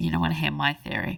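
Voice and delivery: ordinary talk, nothing marked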